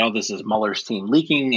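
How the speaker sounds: plain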